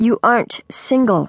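ordinary delivery, nothing marked

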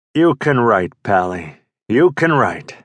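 put-on gravelly Brooklyn accent. Narrating a phone call, voicing the caller as Sonny Day's gravelly Brooklynese. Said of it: "His first client is Sonny Day, an aging comic who was the king of slapstick three decades ago. ... Somebody was speaking in this gravelly Brooklynese".

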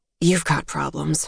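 said in a mutter, mumbled. Turning back to the scope, she answers the man beside her: muttered. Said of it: "she muttered".

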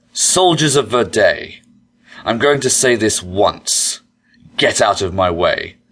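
haughty, arrogant, commanding tone full of superiority. Narrator reads an elf confronting soldiers formed in front of the gate: arrogant demand. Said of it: "the elf demanded arrogantly".

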